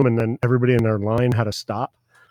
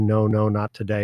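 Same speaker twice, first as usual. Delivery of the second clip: usual speaking voice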